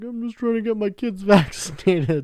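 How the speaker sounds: play-acted, high, tearful, crying, pleading voice. Retelling the mother's plea to the bus driver: imitating someone crying.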